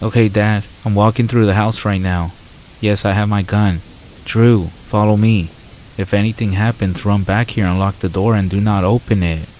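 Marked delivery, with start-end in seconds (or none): none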